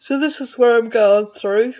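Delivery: talking through a loud yawn. Narrating a walkthrough of choosing papers for a project: yawning while talking. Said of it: "sorry, yawning".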